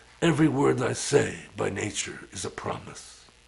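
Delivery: dropped low, roughened, creaky voice. Quoting a character from a nineties movie: Marlon Brando voice. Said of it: "he talks like this, you know, Marlon Brando".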